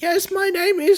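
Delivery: put-on old-lady grandmother voice pitched very high. Acting out how she would talk, in a grandmother voice. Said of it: "talk like a grandmother".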